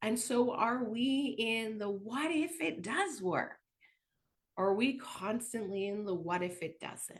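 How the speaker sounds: ordinary delivery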